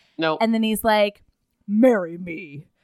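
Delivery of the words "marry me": gruffest imaginable, very gruff, low voice. Retelling a man's proposal in a story, gruffest voice in the world. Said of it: "in the gruffest voice in the world".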